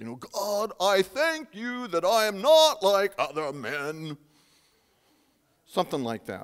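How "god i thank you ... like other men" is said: arrogant, exalted put-on tone, high and slow. Retelling the parable, the speaker voices the Pharisee praying: mock-arrogant, exalted voice. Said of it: "you have to have kind of an arrogant, exalted voice".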